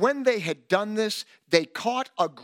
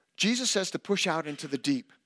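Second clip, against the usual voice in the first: normal talking voice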